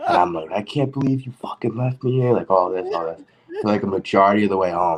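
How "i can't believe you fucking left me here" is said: acted, high, furious, drunken screaming. Retelling a drunken argument with a roommate: imitating screaming at roommate. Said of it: "we just start screaming at each other".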